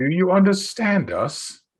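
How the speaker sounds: put-on loud old voice. Calling out to strangers in character: loud old voice. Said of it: "as loud as my super old voice will allow me".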